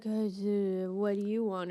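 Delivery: mock slurred drunk speech. Retelling a movie scene where a character asks something: imitating drunken slurring.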